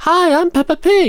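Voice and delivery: very high, slow cartoon voice. Offering to do the voice during a recording: Peppa Pig voice. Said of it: "I can do the voice".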